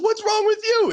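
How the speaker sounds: mock panicked, frantic shriek, very high. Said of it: "so she's screaming".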